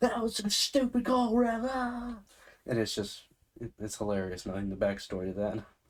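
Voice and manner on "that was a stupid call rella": very high, shrill, loud, drawn-out screaming. Retelling a grandparent watching football, imitating grandma screaming at the TV. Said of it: "my grandma is screaming at the T V".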